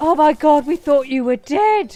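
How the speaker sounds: really loud exclaiming. Retelling the moment a man walked into the parents' shop: really loud exclamation. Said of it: "I exclaimed in a really loud voice".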